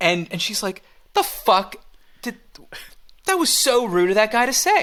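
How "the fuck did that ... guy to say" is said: put-on angry, pissed-off voice, higher pitched. Retelling a complaint after leaving past a man: imitating a pissed-off Jill. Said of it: "now suddenly Jill's pissed off".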